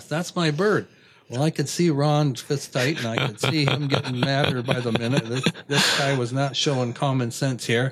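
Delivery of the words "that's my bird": put-on, just a hint of hollering, half-voiced. Retelling a man running up the fence row at them, retelling a yell. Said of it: "And he's yelling the whole time".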